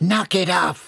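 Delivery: sharp sibilant hiss. Kicked from behind, she whirls on the blonde in the chair behind, hissing. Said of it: "she hissed".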